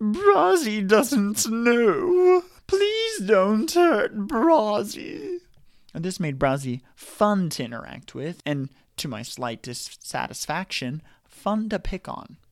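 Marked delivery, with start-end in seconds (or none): 0.0-5.4 loud, drawn-out whine, pitched high. Quoting Brazzi, who talks about himself in third person, whiny Brazzi voice. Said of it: "Brazzi had a whiny voice and talked about himself in the third person, like".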